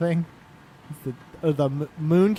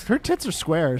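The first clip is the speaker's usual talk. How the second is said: ordinary talk, nothing marked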